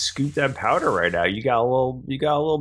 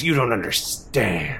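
spoken in open, accusing anger; 3 semitones lower than usual. Voicing a character who looks at a player angrily: angry. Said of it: "looks at you angrily and goes".

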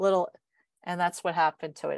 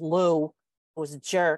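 usual speaking voice

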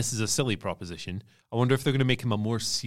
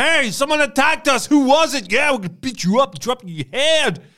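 very loud, very high, shrill booming jock-style shouting; 8 dB louder than usual. Imitating how the Creed brothers talk: imitating the Creed brothers shouting. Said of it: "talk exactly like they wrestle and how they look".

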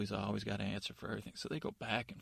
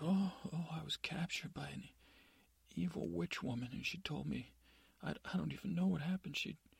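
bewildered, woozy, dazed, slightly high rambling; 7 semitones higher than usual. Telling a story, voicing the captain of the guard: acting dazed. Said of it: "he's just acting all dazed".

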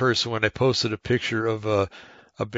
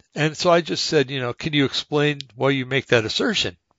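ordinary talk

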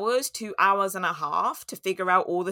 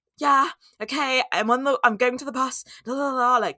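put-on panicked speech, higher pitch; 6 semitones higher, 4 dB louder than usual. Recalling talking to a friend during an anxiety attack, retelling panicked speech. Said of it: "like really panicking".

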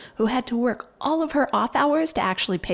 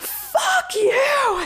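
mock shrill, all-out top-of-lungs scream; 3 dB louder than usual. Speaker retells screaming at a man in a story, retelling a scream. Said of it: "I screamed".

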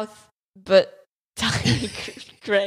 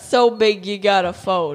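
amateurish, put-on New York accent; 4 dB louder than usual. Describing a pizza ad, quoting the guy who folds his slice, in a New York accent. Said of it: "in his New York accent".

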